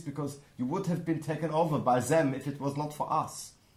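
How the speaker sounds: fake French accent on every word. Teasing about the french, spoken in a put-on french accent. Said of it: "we will speak like this".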